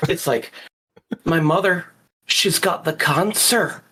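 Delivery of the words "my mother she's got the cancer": put-on Irish accent, cancer drawn out long. Showing how Irish people say cancer: imitating an Irish accent. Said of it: "if you're Irish, they always say it so much worse".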